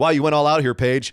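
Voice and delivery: plain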